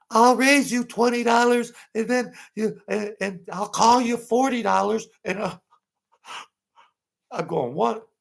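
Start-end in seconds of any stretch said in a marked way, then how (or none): 0.1-5.0 put-on high-pitched voice, much higher. Retelling a player raising a bet at the table, imitating a high-pitched voice. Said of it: "He had a high-pitched voice".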